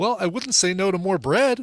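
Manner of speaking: light, nice, playful voice. Retelling an exchange with a server, the speaker re-enacts a nice, playful request. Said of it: "I said it like that in a nice little playful way".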